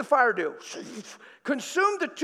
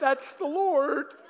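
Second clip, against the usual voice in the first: put-on tearful, crying voice, higher pitched; 3 semitones higher than usual. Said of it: "and I just start crying".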